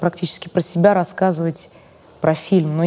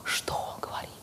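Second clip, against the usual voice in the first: awed, rapturous hushed whisper on an inhale. Retelling listening to a man who speaks very quietly, acting out an awed whisper. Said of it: "(восторженно вдыхает, шепчет)".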